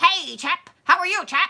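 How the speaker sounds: put-on old-fashioned movie-style chap voice. Imitating how people used to talk in old movies: old movie talk. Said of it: "They used to talk different".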